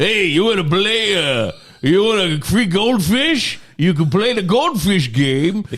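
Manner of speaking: voice with no front teeth. Imitating a man running a carnival game, toothless carnival worker voice. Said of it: "I'm kind of doing that voice because he's not, he has none of these front teeth".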